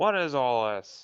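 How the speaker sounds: mild, half-held yell. Narrating a scene, voicing someone yelling through the crowd: rather loud yell. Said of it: "a rather loud voice yell".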